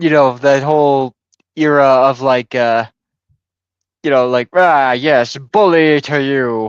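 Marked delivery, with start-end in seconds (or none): 4.5-6.7 slow, drawn-out, swaggering, manly boastful tone. Explaining a president's era with a quick imitation of Theodore Roosevelt, manly swagger. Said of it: "put up your dukes kind of attitude of manliness".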